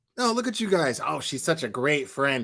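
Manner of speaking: dripping, mocking sarcasm. Ranting about irresponsible kids at a party, mock sarcastic tone. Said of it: "Like all sarcastic".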